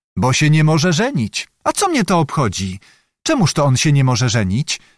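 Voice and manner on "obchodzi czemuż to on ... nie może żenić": ordinary delivery, nothing marked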